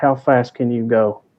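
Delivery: slow, hushed half-whisper, very close to ear. In a role-play scene, the speaker's character speaks into her ear, half-whispering. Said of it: "I'll whisper in her ear".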